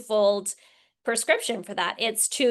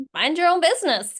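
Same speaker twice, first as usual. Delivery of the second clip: a touch of sarcastic snark, slightly pitched up; 6 semitones higher, 3 dB louder than usual. Showing how Americans usually hear the phrase, with some snark. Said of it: "we usually hear it with like a degree of snark".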